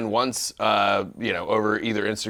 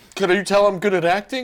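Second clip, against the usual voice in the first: loud, shrill, very high-pitched movie-star voice; 11 semitones higher, 6 dB louder than usual. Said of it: "That's my [name] impression".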